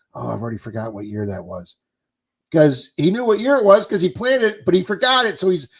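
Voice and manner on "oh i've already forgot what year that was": mock mutter under breath, lower and quieter. Retelling a clip from a metal detecting video: imitating someone muttering under breath. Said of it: "mutter under his breath".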